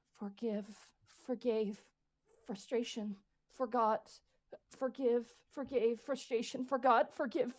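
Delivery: tiny, small, repeating voice. Describing heavy guilt, the speaker voices the inner voice that keeps repeating, little voice. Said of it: "you hear a little voice of if go".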